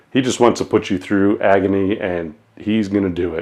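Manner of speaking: ordinary talk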